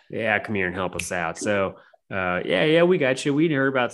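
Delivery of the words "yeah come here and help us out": put-on Texas accent. Asked for a quick Texas accent by someone who mimics accents, Texas accent. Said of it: "I can mimic accents".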